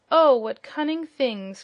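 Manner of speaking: sudden exclamation, called out. Narrating a story, voicing Dorothy as she picks up a piglet, crying out. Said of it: "cried Dorothy".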